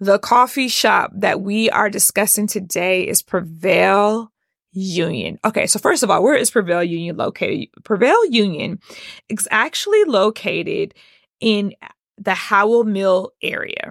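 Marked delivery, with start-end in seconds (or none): 0.0-5.4 slow, carefully paced, deliberate, every word placed. Repeating a sentence after saying it too quick, slowing down. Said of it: "Let me slow down".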